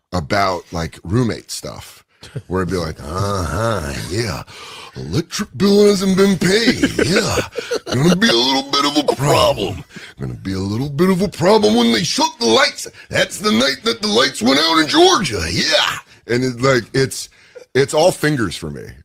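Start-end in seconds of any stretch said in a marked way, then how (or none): 3.0-15.9 swooping, pitched-up wrestling promo voice with wide pitch. Cutting a mock wrestling promo about roommate bills: Macho Man Randy Savage impression. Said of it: "Randy Savage impersonator".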